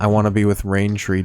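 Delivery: flat same-tone deadpan voice. Parodying a line from a Wes Anderson movie: Wes Anderson deadpan monotone. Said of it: "movie where everybody talks in the same tone of voice".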